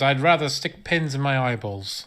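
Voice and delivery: ordinary talk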